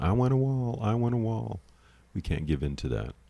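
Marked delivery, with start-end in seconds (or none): 0.0-1.6 high, shrieking, screaming tantrum. Mocking someone's little tirades: imitating someone screaming. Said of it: "Him just screaming".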